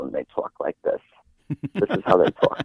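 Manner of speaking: put-on fast-talking elderly woman's way of speaking.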